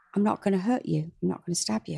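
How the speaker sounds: usual speaking voice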